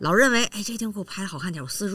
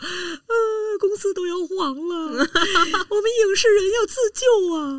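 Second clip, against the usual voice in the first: put-on, drawn-out, very high, slow tearful pleading wail; 13 semitones higher, 4 dB louder than usual. Retelling a clip seen on Douyin: imitating Li Jing crying pitifully. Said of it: "李静哭了".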